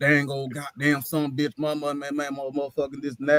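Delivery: put-on grumbling, fussing rant in Cajun accent. Retelling the contractor cussing on arrival, imitating a Cajun contractor fussing and cussing. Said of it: "fussing and cussing".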